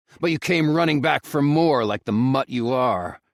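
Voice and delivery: through clenched teeth. Narrator reads the first-person reply to someone demanding money, through clenched teeth. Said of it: "I say through clenched teeth".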